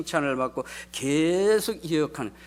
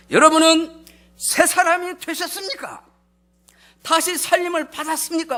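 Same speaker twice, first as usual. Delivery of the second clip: raised, louder tone, nudged up a notch; 12 semitones higher, 6 dB louder than usual. Speaker retelling how he asked the congregation the question again: raised pitch. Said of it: "목소리 톤을 요만큼 높여서".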